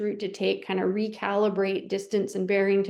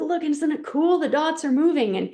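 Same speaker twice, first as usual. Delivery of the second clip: mock eager, high, excited voice; 7 semitones higher, 4 dB louder than usual. Retelling showing a video of moving dots to dad: retelling own excited words. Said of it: "I was getting really excited by the dots".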